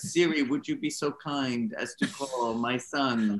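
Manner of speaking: slow, courteous, drawn-out put-on Italian accent. Retelling how he asked Siri to call his son: imitating an Italian accent. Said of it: "trying to imitate his beautiful accent".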